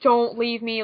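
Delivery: put-on begging, pleading voice. Quoting Asuka's plea from the manga: imitating Asuka begging. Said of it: "Asuka's begging".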